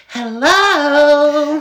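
extremely feminine, very high, stretched-out voice. Quoting a man's reply to Sally's remark, in a very feminine voice. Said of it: "in the most feminine voice I've ever heard".

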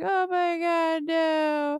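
acted weepy wail, very high, slow, drawn out. Recounting a movie scene where the mom reacts to a killing: imitating a mom crying. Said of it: "the mom's like crying like".

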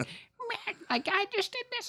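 very high, squeaky little voice. Describing a business guy heard on podcasts, imitating his squeaky voice. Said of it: "he's got kind of a squeaky voice".

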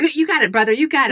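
mock, supportive, encouraging cheering tone. Acting out a student cheering on a classmate: imitating someone cheering on. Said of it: "cheer each other on".

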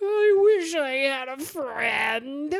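drawn-out high wail. Voicing a prisoner in a rotting jail cell: wailing and moaning. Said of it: "kind of wail and moan from the prisoner".

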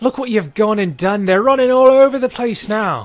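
high-pitched, loud yelling in a put-on voice. Voicing a character yelling out to another about the chaos: yelling in character. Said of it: "he yells out to Red".

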